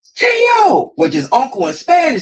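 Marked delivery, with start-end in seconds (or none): 0.2-1.0 put-on screaming, pitched higher. Retelling calling to an uncle around the ring: retelling a scream. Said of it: "I'm screaming through the top of my lungs".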